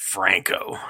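whispered, breathy, dripping with utter disgust. Asked to repeat the name the same way: put-on utter disgust. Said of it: "Can you say it like that one more time?".

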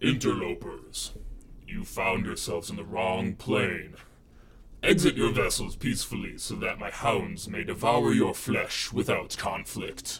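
thunderous, very loud, booming voice. Narrator voices a being addressing the interlopers, in a loud booming voice. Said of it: "A loud booming voice can be heard".

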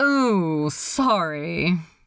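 not sounding sorry. Narrator reads a character apologizing, not sounding very sorry. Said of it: "not sounding very sorry".

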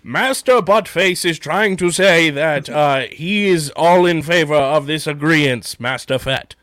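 mechanical, robotic droid voice. Speaker does his best impression of the droid translating for Master Fett: 8D8 impression. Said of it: "I'm going to do my best 8D8 impression".

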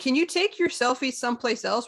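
acted, mild, half-yelled, called-out voice. Retelling telling a couple to leave while closing the building: retelling a yell. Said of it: "I legit yelled out".

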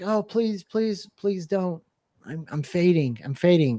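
mock begging, slow and drawn-out pleading voice. Describing a moment in a game trailer, imitating Samus pleading. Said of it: "right here where she's like".

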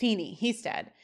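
ordinary talk

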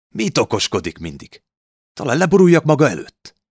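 very high, loud, defiant, challenging talk-back tone. A narrator reads a girl talking back to her father, defiant. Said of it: "Kihívóan mondta az apja felé".

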